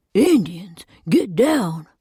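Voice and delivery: carrying, projected stage whisper. Reading a story aloud, a guard warns the boss: loud whisper. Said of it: "Reese calls out in a loud whisper".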